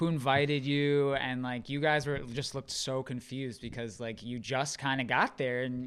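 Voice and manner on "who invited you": loud, hostile, belligerent tone. Retelling how a woman at a party got worse: imitating a belligerent woman.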